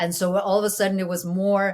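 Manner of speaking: ordinary talk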